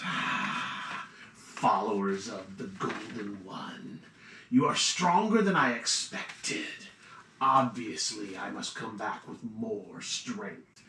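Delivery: snaky, hissing voice, hiss on every s. Recounting a game, voicing the guy atop the tower, in a hissing, sibilant voice. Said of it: "in this kind of hissing, sibilant voice says".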